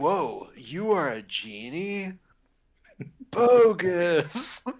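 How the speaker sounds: movie-star voice, word "bogus" drawn out. Joking about the film's hero sounding like him: Keanu Reeves impression. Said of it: "he sounds like Keanu Reeves".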